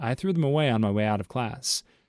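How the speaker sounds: plain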